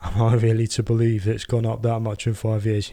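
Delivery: put-on, very sarcastic, sneering presenter tone. Retelling a presenter's question on a show: imitating a sarcastic tone. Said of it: "very sarcastically saying".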